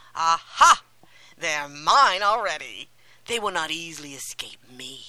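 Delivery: loud, mocking, gloating laughter, laughing to herself. A woman senses Hansel and Gretel coming near, mocking and laughing to herself. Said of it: "she laughed to herself and said mockingly".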